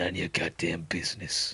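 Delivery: very low, deep, dropped-down delivery. Reading a game line in a different character's voice: Punisher voice. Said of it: "Could read that in Punisher's voice instead".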